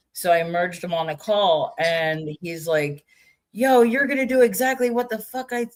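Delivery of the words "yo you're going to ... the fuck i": harsh, barking, high drill-sergeant voice. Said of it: "he's like a drill sergeant".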